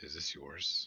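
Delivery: voiced stage whisper. In a role-play scene, the speaker's character turns to the gnome, half-whispering. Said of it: "I'm just like whispering to her".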